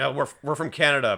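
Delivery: put-on dismissive tone. Retelling a movie scene where characters brush off a traveler: imitating a dismissive reply. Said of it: "They just kinda dismissively say".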